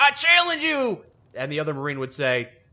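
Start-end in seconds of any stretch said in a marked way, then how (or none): 0.0-1.0 very high, keen, gung-ho, eager voice. Acting out a new Marine slapping down a coin: imitating an eager Marine's challenge. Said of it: "slap down his challenge coin".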